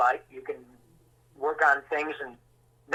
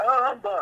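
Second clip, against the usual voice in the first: put-on mouth-full mumble, higher; 9 semitones higher than usual. Retelling an actor answering with a sandwich in his mouth: imitating talking with mouth full. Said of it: "he's got a peanut butter sandwich in his mouth".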